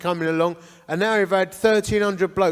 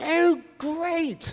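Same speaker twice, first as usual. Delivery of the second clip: very high, put-on upper-class posh accent; 11 semitones higher than usual. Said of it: "I wanna mimic them".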